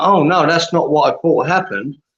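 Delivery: plain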